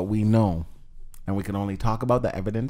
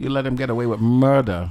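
odd put-on accent, unplaceable, hard to pin down; 2 semitones higher than usual. Co-host teasing another, who then asks what accent that is: put-on accent. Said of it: "What accent is that?".

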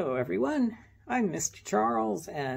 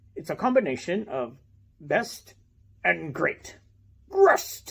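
puppet-show pirate character voice; 4 dB louder than usual. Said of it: "the puppet pirate".

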